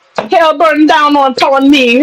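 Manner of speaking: put-on Jamaican accent throughout the whole line. Recalling copying a Jamaican neighbor, imitating Harry's Jamaican accent. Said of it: "You said my accent's on point".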